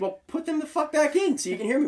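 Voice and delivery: top-of-the-lungs scream, pitched very high, shrill. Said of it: "screaming and yelling at me".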